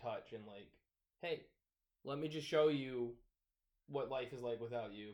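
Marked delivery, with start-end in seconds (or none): none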